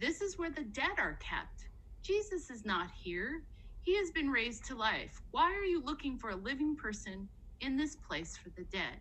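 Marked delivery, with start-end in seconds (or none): none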